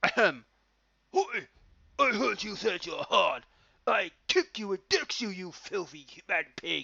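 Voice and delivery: bad, poor put-on Cockney accent. A Geordie storyteller quotes a man threatening another man, in a bad Cockney accent. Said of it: "bad Cockney accent coming in".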